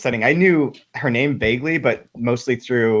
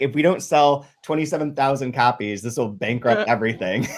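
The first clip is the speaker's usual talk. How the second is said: ordinary talk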